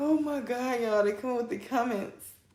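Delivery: high voice, words broken up by laughter. Reacting to comments during a reading, laughing while talking. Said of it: "I'm laughing".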